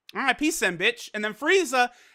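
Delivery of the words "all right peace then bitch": plain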